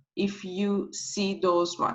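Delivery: plain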